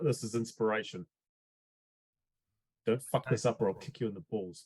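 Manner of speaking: whispered speech. Leaning in before Dash's intimidation check, a player whispers in his ear. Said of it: "whisper in Dash's ear".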